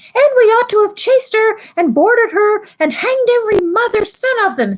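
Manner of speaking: tiny, very high, squeaky talking-mouse voice. Narrator reading a talking mouse's line aloud: Reepicheep mouse voice. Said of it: "I'm sure I should be speaking in the mouse's voice".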